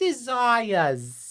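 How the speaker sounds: put-on strong Brooklyn accent. Quoting a character's introduction line, in Baroness von Bonbon's New Jersey Brooklyn accent. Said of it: "the ultimate New Jersey Brooklyn accent".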